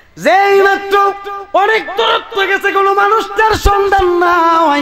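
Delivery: rising, very high, loud preacher-style shouted cry.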